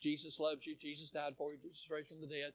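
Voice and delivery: very low, very quiet, flat monotone preachy drone. Demonstrating a teacher-type preacher who never raises his voice, in monotone. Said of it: "They just kind of talk monotone".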